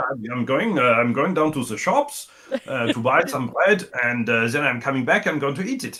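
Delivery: put-on German accent. Giving a quick example of talking as if german, in a put-on german accent. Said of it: "give us a little example?".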